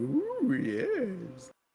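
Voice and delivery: very high, eerie, swooping creature voice. Narrating a voice heard from outside the door, weird voice outside the door. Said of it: "the weird voice of something outside the door going".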